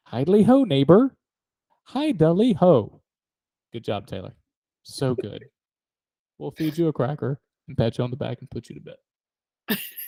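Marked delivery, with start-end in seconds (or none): 0.1-3.0 pitched up with swinging pitch. Doing impressions of cartoon characters: Ned Flanders voice. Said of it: "Next on to Ned Flanders".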